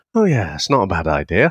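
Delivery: mock deadpan delivery. Acting out a man's reply while he reads old letters aloud, retelling a deadpan reply. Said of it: "he delivers it in such a deadpan way".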